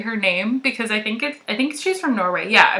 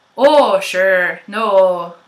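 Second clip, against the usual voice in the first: raised, classic East Coast Canadian accent; 3 semitones lower, 5 dB louder than usual. Showing what an East Coast accent sounds like: East Coast Canadian accent. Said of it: "they don't say it like that, but, like".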